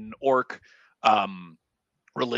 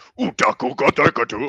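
loud, fake, made-up orc gibberish; 5 dB louder than usual. Voicing an orc answering in his tongue: fake Orcish gibberish. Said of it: "Which to the rest of you sounds like".

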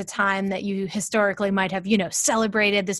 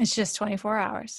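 ordinary talk, nothing marked

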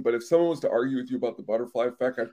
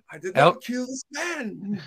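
robot voice, pitched up higher; 9 semitones higher than usual. After recalling a buddy's impression, the speaker tries the robot's line, Sonny robot voice. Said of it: "That was good".

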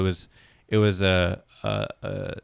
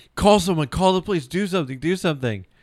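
play-acted, desperate, shrill, very high yell; 9 semitones higher, 3 dB louder than usual. Retelling yelling to people at the concessions: retelling own yelling. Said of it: "yelling to all these people".

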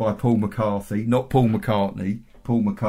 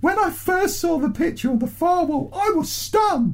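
very high-pitched put-on voice. Reading a woman's police statement in her own words: Nancy Crear voice. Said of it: "I'm going to do my Nancy Crear voice as well".

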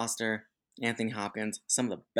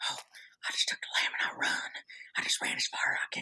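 breathy, hushed, whispered delivery. Quoting a horror movie scene to the others: Jodie Foster impression. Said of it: "That's my Jodie Foster impersonation".

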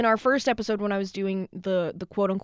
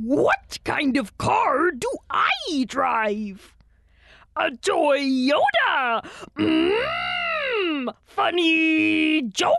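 very slow, loud, high, swooping comedian voice; 9 semitones higher, 5 dB louder than usual. Doing a Yoda impression as a stand-up comic telling a joke: Yoda impression. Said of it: "that's my Yoda impression".

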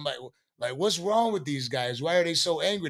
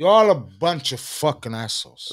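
put-on Cuban gangster accent, louder; 3 semitones lower, 5 dB louder than usual. Retelling insulting partygoers in a Scarface accent. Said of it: "I'm into my Scarface accent".

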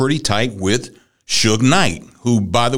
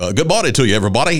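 put-on radio DJ voice. Speaker demonstrates how a radio DJ would talk, in a radio DJ voice. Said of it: "talk to me in your radio voice".

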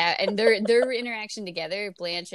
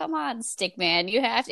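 mock disdainful tone, much higher; 4 semitones higher than usual. Retelling a character's retort from a show, mimicking Dorothy's disdain. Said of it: "dripping with disdain".

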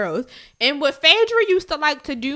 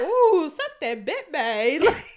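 very slow, drawn-out country drawl; 2 semitones higher than usual. Retelling how a reality show cast member said a line: imitating Phaedra's way of saying it. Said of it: "But the way she said it".

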